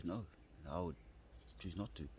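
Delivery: plain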